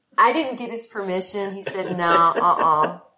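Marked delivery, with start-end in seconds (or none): 2.0-3.0 "no" said loud and final. Retelling how the actor refused permission: imitating Nicolas Cage. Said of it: "that's exactly how he said it".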